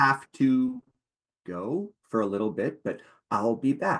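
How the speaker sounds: whispering spider voice. Voicing a spider who whispers to a player: whispering spider. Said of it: "you will hear a whisper from the spider".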